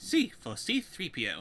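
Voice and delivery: very slow, drawn-out claymation cartoon voice. Asked for the next voice, giving the letter entry in Wallace voice. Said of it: "how's your Wallace from Wallace and Gromit? ... I can give that a go".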